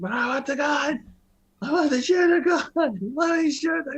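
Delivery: shrill, very high, full-volume screaming. Recounting a scene, the speaker acts out a character being dragged off, retelling a scream. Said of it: "And he's just screaming".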